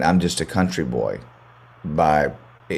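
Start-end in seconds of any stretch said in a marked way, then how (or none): none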